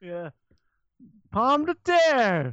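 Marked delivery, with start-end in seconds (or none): 1.3-2.5 high, slow mock French accent. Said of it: "Your Frenchman".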